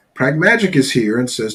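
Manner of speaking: usual speaking voice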